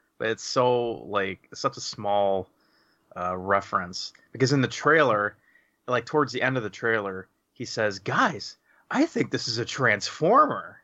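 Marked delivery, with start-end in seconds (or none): 8.0-10.6 stupid-sounding voice with swinging, swooping pitch. Quoting a line from near the end of a movie trailer in a stupid Mark Wahlberg voice. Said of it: "he says it in a stupid Mark Wahlberg voice".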